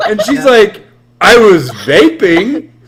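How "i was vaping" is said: acted, loud, defensive, justifying retort. Retelling what a woman answered when asked what happened, imitating a defensive reply. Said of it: "And she said it defensively".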